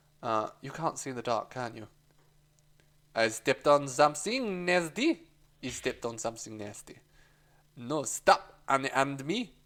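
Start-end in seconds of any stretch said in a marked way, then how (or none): 3.1-5.2 fake, put-on French accent. Performing a scene, the speaker plays a character meant to be fake French: fake French accent. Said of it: "That is how the French sound".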